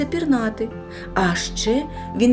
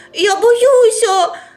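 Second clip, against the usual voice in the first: shouting, yelling, much higher and louder; 12 semitones higher, 10 dB louder than usual. Narrator reading a story, the character Otto cries out to his father: shouting. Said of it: "кричав Отто".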